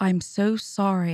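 plain

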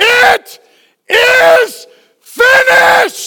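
put-on, loud, very high triumphant cry, drawn out. Quoting words said from the cross, retelling a loud triumphant cry. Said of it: "in a loud and triumphant voice".

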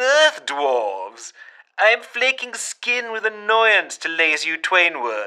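oddly camp, ominous alien voice. An alien speaks through a grill, in camp yet ominous tones. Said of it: "in its oddly camp, yet still ominous tones".

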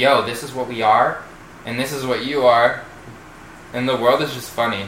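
ordinary talk, nothing marked

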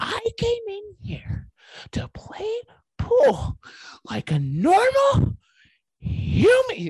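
very high whisper-yell, pitch soaring and dipping. Acting out a pool hall scene as Tim Robinson would, whisper-yelling. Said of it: "He always starts whisper yelling".

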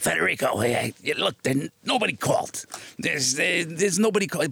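really scratchy put-on voice. Recounting what an irritated man told Federico, in a really scratchy voice. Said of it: "he had this really scratchy voice".

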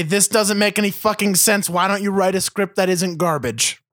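ordinary talk, nothing marked

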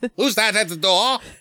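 very high, fake British accent. Retelling a story, quoting the lord asking who is at the door: put-on british accent. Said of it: "In his British accent".

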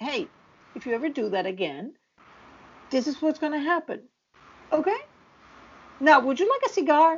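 easy, calm tone with no anger. Acting out how Red would threaten someone: imitating Red with no anger. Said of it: "there would be no anger in his voice".

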